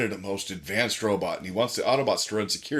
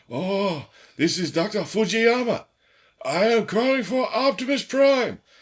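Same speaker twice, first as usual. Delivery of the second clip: very high, loud, cartoonish voice; 13 semitones higher, 5 dB louder than usual. Retelling a cartoon scene, quoting Doctor Fujiyama's call: Doctor Fujiyama voice. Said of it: "one of the best Japanese stereotypes".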